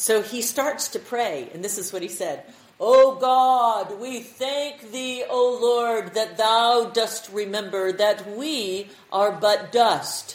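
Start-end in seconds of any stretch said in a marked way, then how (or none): 2.8-10.4 grand preacher voice, booming, very loud and very slow. Retelling a man's prayer from the King James Bible, in a great big voice. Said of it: "stood up with this great big voice".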